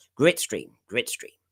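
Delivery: put-on, hammed-up American accent, boastful slogan style. Joking about being topical with a catchphrase: put-on american voice. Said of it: "I've got to do my hands like this".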